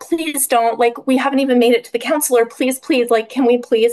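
repeated begging, pleading again and again. Retelling pleading with him not to leave: imitating herself begging. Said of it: "begging him".

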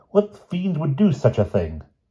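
high trembling voice shaking with fear and anger. A doctor, told a house became a temple of evil, asks, trembling with fear and outrage. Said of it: "voice trembled with fear and outrage".

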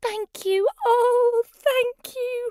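very high-pitched, grateful cry. A witch, saved from a dragon by the animals, thanks them: grateful cry. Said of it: "The grateful witch cried".

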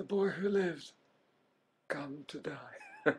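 high, hushed villain voice with swooping pitch. Asked to do an impression, the speaker does a Voldemort impression. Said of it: "That's Voldemort".

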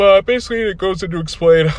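speaking through a yawn. Reviewing a Batman comic's backup story: yawning while talking. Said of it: "sorry, I'm yawning right now".

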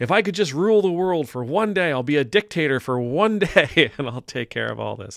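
very loud, swooping, tongue-in-cheek, facetious teasing. Joking about ruling the world for one day: facetious, teasing. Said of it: "I'm being absolutely facetious".

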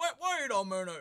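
very loud, high, suddenly blurted exclamation. Retelling a moment from a call, imitating Lorne catching on. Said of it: "But then his brain catches up and he's like".

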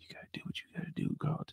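almost inaudible, faint, barely voiced whisper. Retelling how Spencer talks to Carlton: imitating Spencer whispering. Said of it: "I can't hear you".

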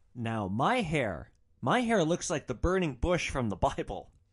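plain

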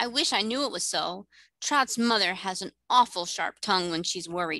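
ordinary delivery

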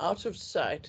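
ordinary delivery, nothing marked

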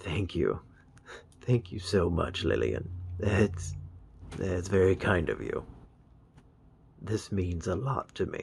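slow speech, voice catching, choked up. Thanking a sender for a surprise gift, choked up. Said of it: "that actually did choke me up a little bit".

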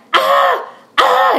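pained yelling, high and loud.

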